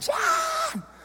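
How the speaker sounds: put-on mama bear yell. Retelling a woman on the beach calling his name, imitating a mama bear yell. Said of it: "I got the mama bear voice coming".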